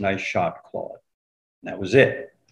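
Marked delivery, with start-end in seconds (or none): 0.0-1.0 put-on near-whisper, barely audible and even quieter. Retelling a grudging compliment on a golf hole: imitating a barely audible voice. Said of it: "in a barely audible voice".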